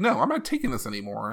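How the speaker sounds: plain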